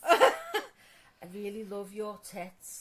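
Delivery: low, swooping fake seductive bedroom voice. Trying to say something seriously sexy as a joke: mock seductive voice. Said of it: "If you said something seriously sexy right now".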